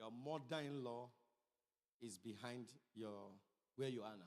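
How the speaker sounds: low, slow, drawn-out prophetic pronouncement. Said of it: "We'll see what he says".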